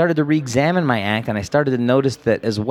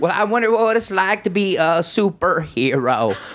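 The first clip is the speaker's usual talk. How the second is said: very slow, high bleating voice; 6 semitones higher than usual. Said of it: "doing his goat voice".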